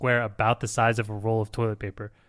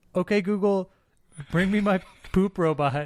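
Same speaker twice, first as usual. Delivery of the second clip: high, raised shouting voice; 8 semitones higher than usual. Imagining calling out from the bathroom: pretend screaming at a door. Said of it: "screaming at the door".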